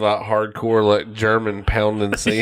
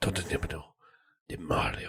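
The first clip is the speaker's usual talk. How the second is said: whispered, put-on Japanese accent; 5 semitones lower, 14 dB quieter than usual. Mocking a character who lacks an Italian accent, in an odd foreign accent. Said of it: "maybe it's like German or Slavic. or Japanese".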